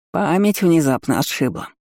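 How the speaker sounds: caustic, biting, sneering, smirking acidly. An aunt turns on the narrator; caustic smirk. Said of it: "Едко усмехнулась та самая тетя".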